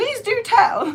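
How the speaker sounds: put-on British accent, pitched very high. Talking while working with burlap fabric, british accent. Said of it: "that was my British accent".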